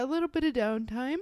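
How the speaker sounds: talking through a yawn. Chatting about the week, yawning. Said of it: "Are you yawning?".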